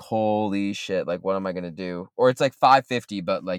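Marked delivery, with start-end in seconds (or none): none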